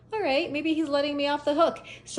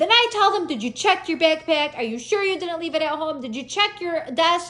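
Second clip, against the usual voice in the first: put-on yelling, higher pitch; 5 semitones higher, 3 dB louder than usual. Retelling what was said to a police officer: retelling a yell at an officer. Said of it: "And I was yelling too".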